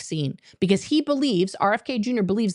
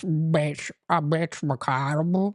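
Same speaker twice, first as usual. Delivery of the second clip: put-on old voice, lower pitch; 5 semitones lower than usual. Showing how to do the voice by letting the jaw go: Mitch McConnell old Republican voice. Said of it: "You love my old Republican voice".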